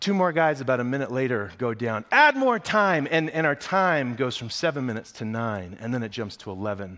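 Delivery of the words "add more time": very high, shrill drill-sergeant scream. Speaker retells Stacy calling to add more time as guys go down, imitating Stacy screaming. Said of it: "she's just screaming her head off".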